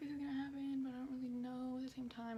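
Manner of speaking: usual speaking voice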